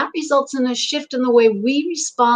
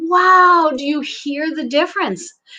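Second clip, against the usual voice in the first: ordinary talk, nothing marked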